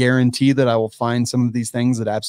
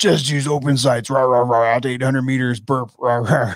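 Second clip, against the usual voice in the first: heated ranting outburst, put-on angry voice. Speaking to Zach C, doing an angry Jeremy voice. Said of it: "angry Jeremy voice".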